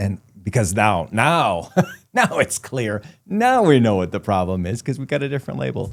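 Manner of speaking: heavy, thick sarcasm with swooping sing-song tune. Commenting to another speaker on a diagnosis change: thick sarcasm. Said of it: "picking up on the sarcasm on that, laying it on pretty thick".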